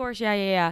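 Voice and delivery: play-acted casual, unworried, breezy, laid-back tone. Retelling how a brother answered notes before speaking: imitating brother's laid-back tone. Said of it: "was acting like he was, like, not really worried".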